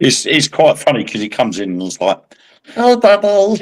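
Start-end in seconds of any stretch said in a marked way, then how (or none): 2.8-3.6 put-on very high, squeaky boyish voice. Describing a boy who comes in calling out, the speaker imitates his squeaky voice. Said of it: "he's got a really squeaky voice".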